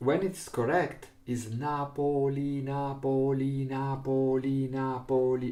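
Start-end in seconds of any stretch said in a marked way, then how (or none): 1.3-5.5 slow "Napoli" with equal syllable beats. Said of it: "all have the same length".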